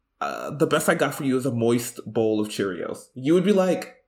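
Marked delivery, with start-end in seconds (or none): none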